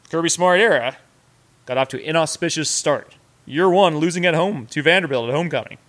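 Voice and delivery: mock sports announcer voice. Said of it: "It's my announcer voice".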